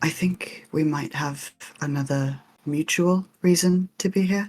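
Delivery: hushed, close, leaning-in half-whisper. Speaker playing Cersei leans toward him, Cersei half-whispering. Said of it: "leans to him and whispers".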